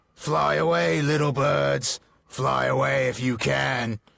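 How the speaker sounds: raspy, rough goblin voice, shouting. Reading a story aloud, goblins shout out to the birds: shouting goblin voice. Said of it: "let me get my goblin voice ready here".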